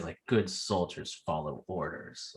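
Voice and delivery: mock ominous, sinister, low, dark, menacing tone. Talking about Clone Wars, the speaker quotes how a character said it: retelling a dark, menacing line. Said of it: "he said it in such a dark way".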